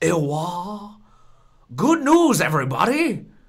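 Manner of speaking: belted high, with the "wah" stretched long. Announcing good news to the others, in a Professor Farnsworth impression. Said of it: "where's my Professor Farnsworth impression?".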